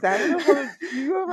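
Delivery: high-pitched speech broken by giggling laughter.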